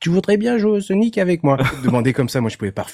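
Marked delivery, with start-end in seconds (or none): 0.0-1.6 very high, tiny little voice. Speaker retells how a younger boy would come and ask him something: imitating his small voice. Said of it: "avec sa petite voix".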